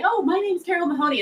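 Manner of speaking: tiny, teasing, mocking kid voice, very high. The speaker retells her kids mocking her cold calls: imitating kids' mocking little voice. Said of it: "they go into this little voice and say".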